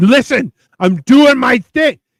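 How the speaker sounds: loud, aggressive, pushy, dismissive tone. Mimicking a cook who is aggressive about his food: imitating an aggressive cook. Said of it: "he's so aggressive with it that he's like".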